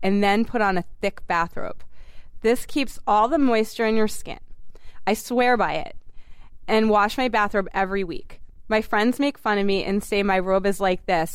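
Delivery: plain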